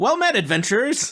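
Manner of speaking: talking skull voice. Voicing a skull on the ground that greets the adventurers: talking skull character. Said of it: "And the skull on the ground says".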